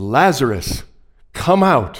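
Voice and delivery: loud cry with full commanding authority. Retelling the Gospel story, Jesus calls Lazarus out of the tomb with a loud cry. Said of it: "he cries out with a loud voice".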